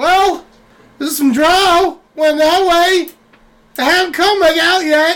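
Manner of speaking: very high, rushed, jittery, nervous goat voice. Playing a goat answering whether it saw anything: anxious goat voice. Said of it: "you seem a little anxiety-ridden".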